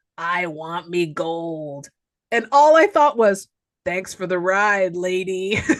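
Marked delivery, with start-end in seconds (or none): 0.2-1.9 deep, gurgly, very slow leprechaun voice, "gold" drawn out. A speaker retells what a leprechaun puppet says, in a deep, gurgly leprechaun voice. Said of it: "in a deep, gurgly voice, he's all".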